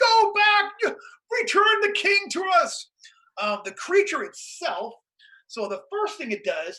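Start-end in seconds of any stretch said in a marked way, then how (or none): 0.0-2.9 very high, drawn-out scream. Narrating a scene where the Grand Vizier screams at the creature; screaming. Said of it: "the Grand Vizier is like screaming at the thing".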